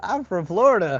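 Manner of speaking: shrill, very loud, high put-on Southern accent. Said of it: "Who is this kid with the Southern accent?".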